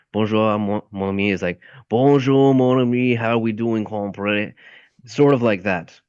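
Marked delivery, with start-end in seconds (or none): 1.8-4.5 put-on Cajun accent mixing Southern and French sounds. In a group discussion about accents, demonstrating a cajun accent. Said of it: "they have a Southern and French accent mixed".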